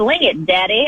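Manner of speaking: put-on mild, light Southern accent. Quoting a former GM's remark about a quarterback: imitating John Robinson's Southern accent.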